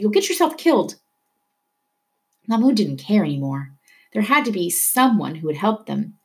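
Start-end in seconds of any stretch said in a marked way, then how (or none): 0.0-1.0 high-pitched, called-out voice. Mahmoud's father, as cars speed past his son in the street, calls out. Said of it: "his father called".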